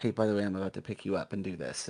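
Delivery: whisper, soft, quick and low in pitch. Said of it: "they're, like, whispering in their ear".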